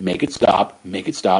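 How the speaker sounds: put-on frantic, panicked, freaked-out pleading, losing control. Retelling a TV scene where a soldier is freaking out: imitating someone freaking out. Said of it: "He's freaking out".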